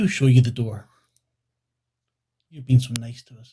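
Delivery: dark, deep woman's voice. A storyteller voices a woman answering instead of the children, dark deep woman's voice. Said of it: "A woman's voice is dark and deep".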